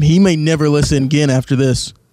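normal talking voice

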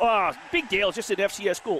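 ordinary delivery

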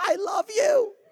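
put-on high-pitched, ringing yell. Retelling a lady with the tickets yelling after the speaker walking away, imitating a lady yelling. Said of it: "she's yelling out after me".

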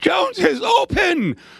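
mock, very high, excited, shouted sportscaster call. Retelling Brent's call of an open receiver: imitating Brent's excited call. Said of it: "you could hear it in Brent's voice".

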